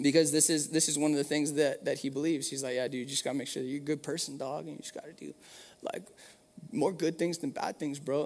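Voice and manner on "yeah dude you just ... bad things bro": soft, easygoing, laid-back bro talk. Describing what his little brother believes, the speaker imitates his little brother's bro talk. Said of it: "that's how he talks".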